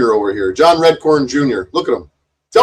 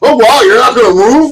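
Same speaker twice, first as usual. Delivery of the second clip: very high, loud, sudden outburst; 10 semitones higher, 6 dB louder than usual. Mocking a bystander who interjects during an argument: imitating Jason interjecting. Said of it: "listen to Jason interjecting".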